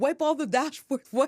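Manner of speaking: panicked, freaking out, yelled high and frantic. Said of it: "he's, like, freaking out".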